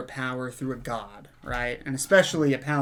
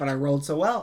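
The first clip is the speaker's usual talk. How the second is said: normal talking voice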